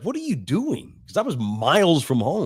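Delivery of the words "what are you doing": baffled, lost-sounding, confused, pitched up. Retelling the stepdad finding him miles from home: imitating a confused question. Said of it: "He's all confused".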